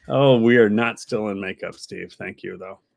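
usual speaking voice

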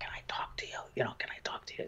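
whispered, hushed. Retelling sneaking up on a grandson at his laptop: retelling a whisper. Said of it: "I whispered".

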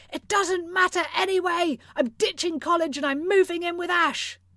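mock shouting, high and loud. Narrator reading someone yelling at their mom through a closed door: yelling. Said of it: "and yelled everything through that closed door".

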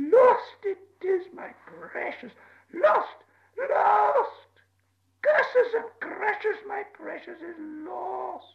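very high, slow, stretched-out, creaky, sobbing wail. Narrator reading Gollum's words as Bilbo hears him, Gollum voice, crying. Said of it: "Bilbo heard him crying".

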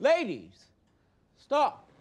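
full-volume yell, very high, very loud and shrill. Breaking up an argument between two women, raised voice. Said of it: "I'm sorry I had to raise my voice".

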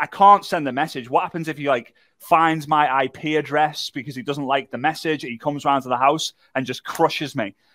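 ordinary talk

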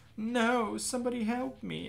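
irritating voice, very high-pitched, very slow and drawn-out. Voicing a character in a scene, calling for help: annoying voice. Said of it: "I choose that annoying voice".

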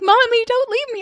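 put-on very high, sobbing, screaming, crying little child voice. Retelling how her son begged not to be left: imitating a crying, screaming child. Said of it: "started crying and screaming".

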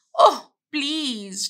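begging, pleading tone. The duck answers the cat, who is going shopping; begging. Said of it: "begged the duck".

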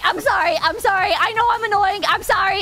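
put-on crying out in pain. Retelling lifting a leg for x-ray scans, reenacting crying out in pain. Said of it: "but I'm crying out anyways".

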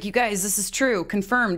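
plain

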